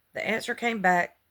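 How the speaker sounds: ordinary delivery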